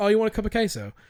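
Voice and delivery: put-on British accent. Retelling a phone call with a British woman, answering her in a put-on British accent. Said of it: "in a British accent".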